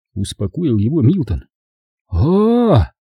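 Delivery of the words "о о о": high, drawn-out relieved exhale on о-о-о. Narrator reads a man's reaction after being reassured, a relieved sigh. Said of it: "облегченно вздохнул Хризантем".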